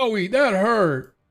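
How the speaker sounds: very high, shrill, loud, pained giant cry. Narrating a fight to the players, the giant cries out: screaming giant voice. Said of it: "So the giant screams".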